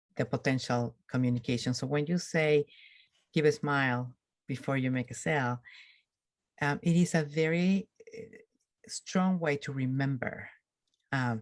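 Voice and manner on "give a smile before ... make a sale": ordinary talk, nothing marked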